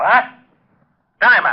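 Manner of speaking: irritated, cross, high yelping voice. Relaying that Jerome is calling for Diamond again; yelling. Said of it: "You better watch that yelling".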